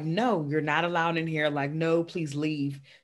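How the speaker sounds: ordinary delivery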